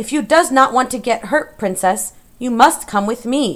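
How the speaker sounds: loud, shouted delivery of rehearsed-sounding lines. Ordered to say her piece, she closes her eyes and addresses the princess, shouting. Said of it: "Mig closed her eyes and shouted the piece".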